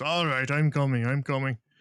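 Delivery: put-on rough, gruff old dwarf voice. Game master voicing someone answering a knock at the door: gruff voice. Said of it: "a rather gruff voice kind of goes".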